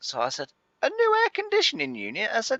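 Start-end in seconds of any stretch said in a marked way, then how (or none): 0.8-2.3 squeaky, very high-pitched voice. Retelling his own reply to a man ordering a new air conditioning unit, very high and squeaky. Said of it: "my voice went very high and squeaky then".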